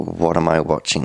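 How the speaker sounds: normal talking voice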